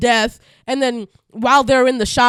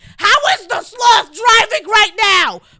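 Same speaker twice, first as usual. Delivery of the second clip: acted-out, high, exasperated yell; 10 semitones higher, 3 dB louder than usual. Retelling yelling at the TV during a movie: imitating own yelling. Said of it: "I'm yelling at the T V".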